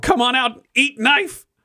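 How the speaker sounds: in a panic. A cornered woman with a knife taunts the one coming for her; panicked. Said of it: "whipping her head around, panicked".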